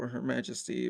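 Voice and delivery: ordinary talk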